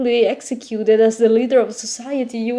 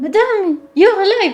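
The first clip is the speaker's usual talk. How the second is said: bright, cheery, high-pitched call; 7 semitones higher than usual. Voicing a girl who bounds up to greet the listener: cheery voice. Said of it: "a cheery voice rings out".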